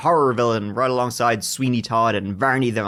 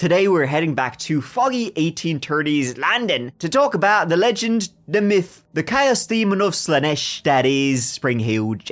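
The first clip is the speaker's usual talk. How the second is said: put-on English accent, drifting in from Australian; 4 semitones higher than usual. A podcast host introduces the episode's topic in an english accent. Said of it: "how's my English accent?".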